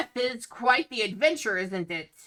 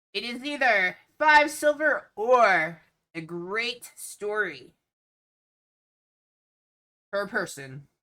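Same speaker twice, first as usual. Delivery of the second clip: loud, boisterous, hearty voice; 3 dB louder than usual. Voicing a half goat, half man greeting visitors at a festival gate: loud, boisterous voice. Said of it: "a loud, boisterous voice".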